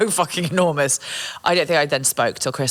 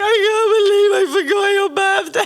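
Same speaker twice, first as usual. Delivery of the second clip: acted, very high, loud, tearful sobbing wail; 5 dB louder than usual. Retelling how Hannah, still crying, apologised: imitating someone crying.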